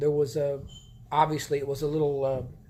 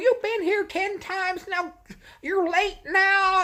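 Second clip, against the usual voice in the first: very high, slow, drawn-out yelling; 3 dB louder than usual. Telling about a woman at a church play yelling at a girl, imitating her yelling. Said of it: "She's yelling at the girl".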